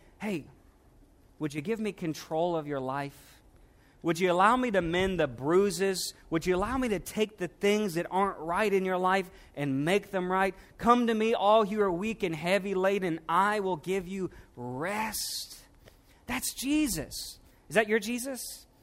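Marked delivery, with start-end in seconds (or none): 0.2-15.6 soft, gentle, hushed stage whisper. Acting out Jesus half-whispering an invitation to surrender: imitating Jesus half-whispering. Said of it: "And he whispers and he's saying".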